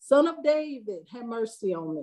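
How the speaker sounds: ordinary talk, nothing marked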